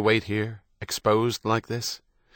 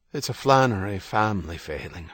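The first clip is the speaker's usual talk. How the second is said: ordinary delivery, nothing marked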